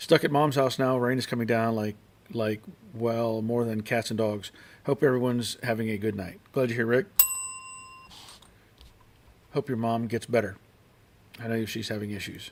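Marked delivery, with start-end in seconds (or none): none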